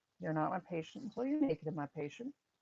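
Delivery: ordinary talk, nothing marked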